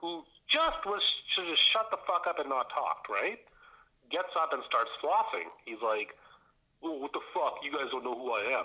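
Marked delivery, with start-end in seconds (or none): 6.8-8.6 bad, lame put-on British accent. Retelling a boyfriend's outburst at the group, mocking bad British accent. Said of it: "in his stupid, lame British accent".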